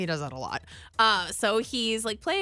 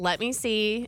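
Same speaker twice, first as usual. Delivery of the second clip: plain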